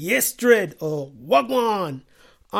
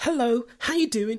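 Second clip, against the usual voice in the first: ordinary talk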